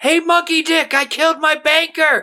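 mock full-throated, shrill, very high-pitched scream. Telling Marty's story as his conscience calls out in public: screaming. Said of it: "the conscience is just screaming".

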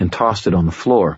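ordinary delivery, nothing marked

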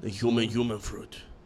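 fake Japanese accent with put-on samurai voice. Friends joking around, one saying a phrase in a fake Japanese accent. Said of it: "Why am I saying it Japanese?".

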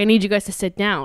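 put-on alarmed, panic-stricken, urgent tone. Retelling what a father said when he came in: imitating someone panicked. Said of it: "comes in in, like, a panic".

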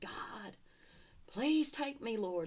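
mock screaming. Speaker recalls what they screamed in their car in the parking lot, retelling a scream. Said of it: "I'm screaming".

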